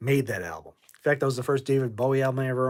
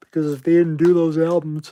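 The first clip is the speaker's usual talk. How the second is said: sleepy, loud, flat words spoken through a yawn; 3 semitones higher, 7 dB louder than usual. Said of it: "sorry if I'm yawning".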